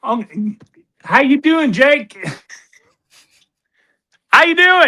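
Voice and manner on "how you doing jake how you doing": put-on Australian accent, higher and louder. Mimicking another caller who impersonated him: imitating a caller's australian accent. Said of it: "But I'm gonna talk like he does".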